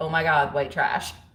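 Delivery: ordinary delivery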